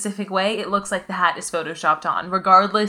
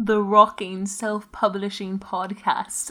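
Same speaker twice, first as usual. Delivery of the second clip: fake, accented put-on English voice. A podcaster recommends self-publishing podcasts and names one in a put-on English accent. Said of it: "That's my English accent".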